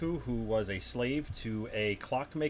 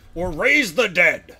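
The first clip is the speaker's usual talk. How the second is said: very loud, raspy, hoarse, warlike, belligerent yell; 8 semitones higher, 16 dB louder than usual. A player voicing his character's second option to the party, in a very bellicose, hoarse voice. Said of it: "in a very bellicose, hoarse voice".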